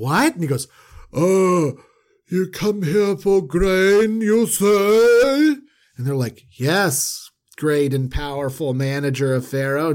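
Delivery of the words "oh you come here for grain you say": disguised voice, higher, louder, slower. Retelling a story, Pharaoh's great manager answers the visitors in a disguised voice. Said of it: "it sounds like he's almost disguising his voice".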